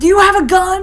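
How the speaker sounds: high, loud, panicked, frantic outburst.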